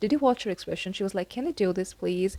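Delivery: plain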